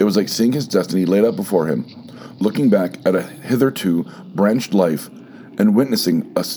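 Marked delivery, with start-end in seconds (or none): none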